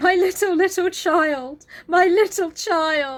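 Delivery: high-pitched, loud, sobbing, tearful breakdown. Retelling how a character breaks down over his child: imitating breaking down crying. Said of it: "he just breaks down going".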